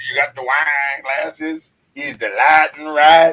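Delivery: put-on own voice with Arkansas country accent. Repeating own lines from the show intro, imitating own Arkansas-sounding voice. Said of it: "I just heard Arkansas".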